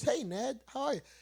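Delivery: agreeable phone voice. Someone who used to work the phones shows greeting a caller, friendlier phone voice. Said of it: "When you have that more friendlier voice".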